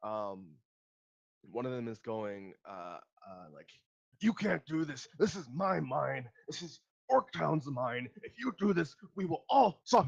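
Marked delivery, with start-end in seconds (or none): 4.2-10.1 high, loud, angry monster shout. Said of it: "it's a huge shouting match".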